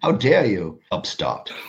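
put-on posh, upper-class British accent. The speaker voices an imagined rebuke in a King Charles accent. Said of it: "Is that your best King Charles accent?".

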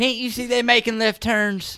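put-on Southern accent. Riffing on watching NASCAR races in a put-on Southern accent. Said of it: "stuck in a Southern accent".

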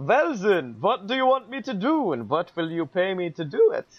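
put-on Transylvanian accent. The Count answering someone who requires his services, Transylvanian accent. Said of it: "Can you lose the Transylvanian accent?".

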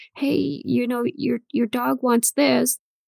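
put-on timid, hesitant, slow, shy childlike little voice. Retelling own childhood words at people's houses: imitating shy child self. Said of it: "Little shy me would go".

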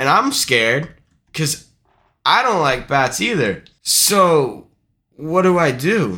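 ordinary talk, nothing marked

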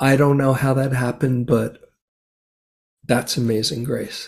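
emotional, choked-up, on the verge of tears. A guest sharing a personal story on a podcast, choked up and tearing up. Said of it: "I'm actually tearing up as I'm sharing that".

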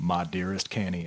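documentary narrator reading voice. Reading a captain's log aloud as asked: Ken Burns voice. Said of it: "read it like it's a, uh, Ken Burns".

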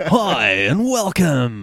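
loud on-air announcer voice. Greeting podcast listeners, in a radio DJ voice. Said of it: "you've got to love a DJ voice".

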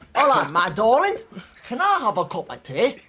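Cockney accent sliding into Scottish accent. Trying out a Cockney line for the others, mixed Cockney and Scottish accent. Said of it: "you mixed London with Scotland there".

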